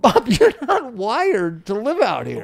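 frank, earnest, candid, sing-song voice. Quoting a friend telling Bob he does not belong: Victoria impression. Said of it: "You do a good Victoria".

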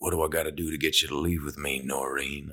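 soft, fake cowboy-style western accent. Recalling your first line as a cowboy in a dream scene, put-on Western accent. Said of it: "I was putting on this kind of Western accent".

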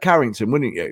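ordinary delivery

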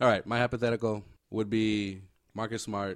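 flat, unenthusiastic delivery with no excitement.

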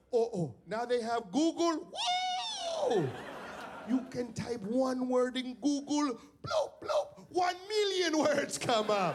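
very high, swooping, sing-song voice. Retelling a father finding out about google: imitating dad's voice. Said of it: "I can't do my dad's voice".

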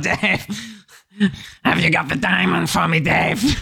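hoarse character voice. Describing a performer's strained voice, imitating it: Papa Lazarou voice. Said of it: "he's got a bit of a papalazaro voice going on there".

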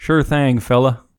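put-on Southern US accent. Hearing a story about a celebrity encounter, the listener joins in: Matthew McConaughey accent. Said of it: "you nailed him".

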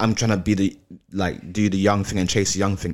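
ordinary talk

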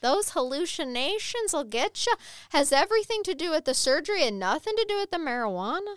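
leprechaun-style Irish accent. Talking with another speaker about hallucinations after surgery, in a leprechaun tone. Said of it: "you had a leprechaun tone".

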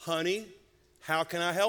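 put-on East Texas accent. Retelling how mom answered a girl from her truck window, East Texas accent. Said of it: "she says in her East Texas accent".

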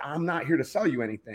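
ordinary delivery

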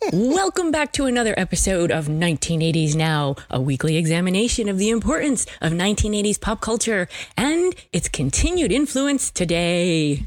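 announcer-style podcast host voice. Opening the podcast episode in place of the absent primary host, in a Will voice. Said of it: "Is this where I put on my Will voice?".

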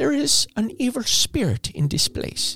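awful whispered priest voice, breathy and hushed. Retelling what the priest said on arriving: terrible Father Doyle impression. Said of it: "terrible, terrible impression of Father Doyle".

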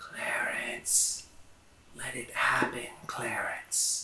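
faint, slow, barely discernible distant whisper. Voicing a faint distant voice calling to the meditating character: barely discernible distant voice. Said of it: "almost, uh, undiscernible voice".

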